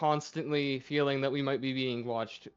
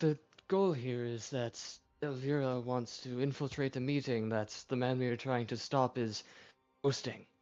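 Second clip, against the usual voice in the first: low, dropped voice, leaning in close; 3 dB quieter than usual. Speaker retells how a man explained the goal: lowered voice. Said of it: "he kind of lowers his voice".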